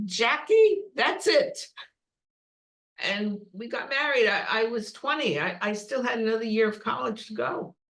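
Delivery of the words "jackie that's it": put-on German accent, pitched up. Retelling what his mother said to her, imitating a german accent. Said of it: "in her German accent".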